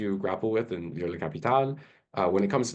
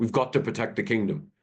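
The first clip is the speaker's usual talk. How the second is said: vague, put-on faux European accent. Mocking film actors' accents: imitating a fake European accent. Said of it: "faux European accents".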